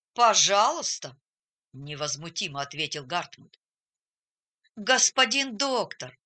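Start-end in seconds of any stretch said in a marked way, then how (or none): 4.8-6.1 begging, imploring, pleading tone. Erwin pleads with the doctor, who threatens Hartmut; pleading. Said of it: "умолял Эрвин".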